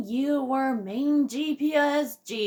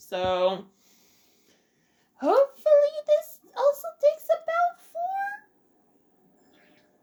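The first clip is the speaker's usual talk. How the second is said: horrible, very high, badly breaking voice crack. Introducing a bonus episode, with a horrible voice crack. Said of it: "She says with a horrible voice crack".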